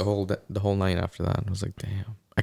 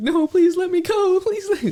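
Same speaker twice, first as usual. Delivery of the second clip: very high, loud, frantic sobbing with panting; 7 dB louder than usual. Retelling a movie scene where a man begs to be let go, imitating frantic crying. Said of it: "the guy's like frantically crying and panting".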